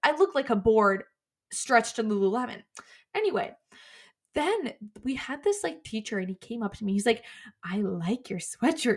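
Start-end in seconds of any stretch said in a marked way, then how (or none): 7.6-9.0 put-on unsettling, creepy tone. Retelling what a teacher said to a student: imitating a creepy teacher. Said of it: "in, like, a really creepy way".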